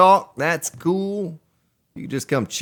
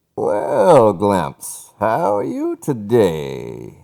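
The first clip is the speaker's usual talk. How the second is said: low, deep, swooping villain voice with "today" stretched out; 5 semitones lower, 4 dB louder than usual. Greeting Glimpse, a big fan of this impression, Bane impersonation. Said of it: "He likes my Bane impersonation".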